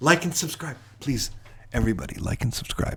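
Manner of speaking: hushed, pleading whisper. Asking viewers to like and subscribe, whispering into the mic. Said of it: "just whispering it into the thing".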